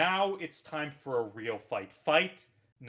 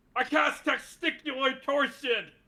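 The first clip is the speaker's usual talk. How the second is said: very high-pitched shouting; 12 semitones higher, 4 dB louder than usual. Suggesting a ban spell for Magius to throw out, Magius shouting a spell. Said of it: "Magius shouts ban spell after ban spell".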